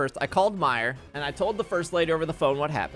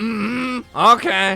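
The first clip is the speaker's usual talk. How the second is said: put-on raspy smoker voice, loud at the end. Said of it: "She has the smoker voice".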